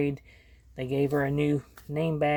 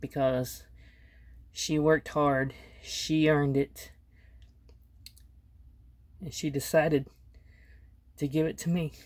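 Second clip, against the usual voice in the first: emotional, choked up, voice catching in throat. Showing viewers an item one of their kids gave them, choked up. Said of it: "I get choked up talking about my kids".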